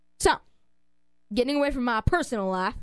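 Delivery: fake rural country accent. Speaker changing the subject away from their personal life, in a country accent. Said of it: "I did that with a country accent".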